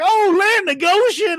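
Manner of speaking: very high-pitched cartoon-style rooster voice. Retelling a 70s movie car scene where GW exclaims on a bridge: Foghorn Leghorn voice. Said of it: "he's like Foghorn Leghorn, the human".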